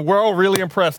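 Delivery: dry, mocking sarcasm. Speaking in character to demons taking to the air: sarcastic.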